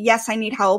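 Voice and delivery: ordinary talk, nothing marked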